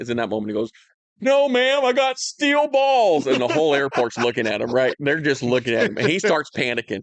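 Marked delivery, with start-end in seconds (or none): 1.2-3.3 very high, loud, drawn-out nervous outburst. Retelling a friend's nervous answer to a security agent: imitating a nervous loud blurt. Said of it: "you say something really loud".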